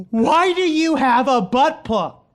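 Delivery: mock, high, stretched, drawn-out yell. Retelling what a daughter said in the living room: imitating a daughter yelling. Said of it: "She yells".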